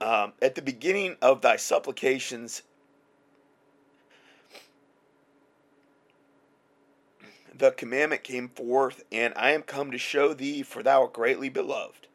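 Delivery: choked-up, breaking voice catching with emotion. Reading a bible passage aloud, getting choked up. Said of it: "I'm getting choked up".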